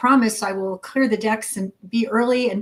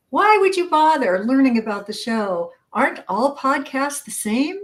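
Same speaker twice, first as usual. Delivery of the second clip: sarcastic, feigned innocence with swooping pitch; 4 semitones higher than usual. Reading out the next podcast-guest mistake to the other speaker, sarcastic. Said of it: "I'm being sarcastic".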